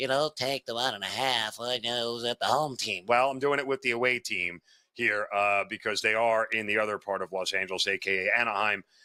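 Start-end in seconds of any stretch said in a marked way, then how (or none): 0.0-3.1 dopey, mocking, deliberately stupid voice. Picking a bet on the Dodgers, imitating Brian Power's stupid voice. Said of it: "imitate Brian Power in his stupid voice".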